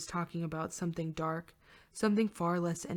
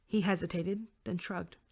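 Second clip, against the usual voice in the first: ordinary delivery, nothing marked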